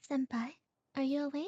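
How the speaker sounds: gentle, soft, hushed delivery. Performing a character's line for a co-performer, gentle, quiet voice. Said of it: "did like a gentle, quiet version of your actual voice".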